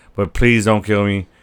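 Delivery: put-on pleading tone. Retelling a show scene where one character begs another: imitating someone pleading. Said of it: "He's pleading for him".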